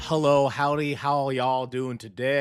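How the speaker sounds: put-on light Southern US twang. Greeting radio listeners at the start of the episode: put-on slight southern twang. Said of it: "I got a little southern twang to my voice".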